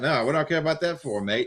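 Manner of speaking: put-on Australian accent. Quoting an Australian character's reply to Americans, in an Australian accent. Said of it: "he's Australian as well".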